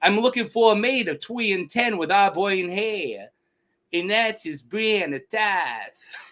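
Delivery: put-on Long Island accent. Speaker imitates a phrase a man says all the time, in a weird Long Island accent. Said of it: "he goes like this weird, like Long Island".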